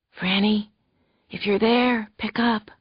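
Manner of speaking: whispered voice. Narrating a novel, voicing an unknown caller asking for Franny, whispery voice. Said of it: "said a whispery voice".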